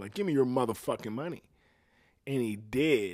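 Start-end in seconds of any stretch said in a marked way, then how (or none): 0.1-1.4 dead-serious, all-business, no-joke tone. Speaker retells demanding money from a man, acting out getting serious. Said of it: "I got all serious and shit".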